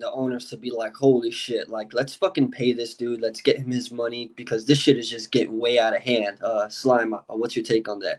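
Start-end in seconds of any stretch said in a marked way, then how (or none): none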